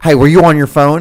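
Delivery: mock angry telling-off. Speaker retells a man yelling at them about being on their phone; retelling a yell. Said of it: "got yelled at".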